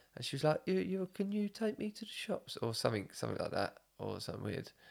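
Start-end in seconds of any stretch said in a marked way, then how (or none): 0.7-2.6 put-on confused old woman voice, higher, quieter, slower. Speaker retelling an old woman asking for a ride, imitating a confused old woman.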